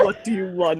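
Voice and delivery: deep voice. Voicing the husband, in a deep voice. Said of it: "give him a deep voice".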